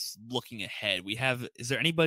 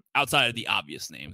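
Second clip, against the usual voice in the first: ordinary delivery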